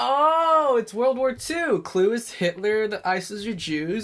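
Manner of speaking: sudden realization, high and slow dawning.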